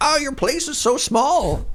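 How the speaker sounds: very high, swooping, old-fashioned put-on voice. Imitating family in Alberta reacting to the couple's place, in an old-timey voice. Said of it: "I gave them like old timey voice".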